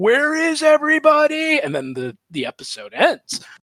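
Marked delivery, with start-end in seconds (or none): 0.0-1.6 mock very high, loud, screaming cry. Retelling a cartoon scene where Bronski is pursued: imitating Bronski screaming. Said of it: "he's sweating and he's screaming, like".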